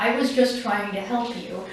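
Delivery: ordinary talk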